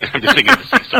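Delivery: laughing, high-pitched and loud.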